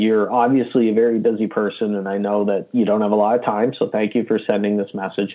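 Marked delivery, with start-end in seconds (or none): none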